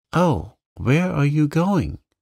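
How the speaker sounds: alarmed, frightened, high cry. A narrator reads her line as his face frightens her, frightened cry. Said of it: "she cried, for his face frightened her".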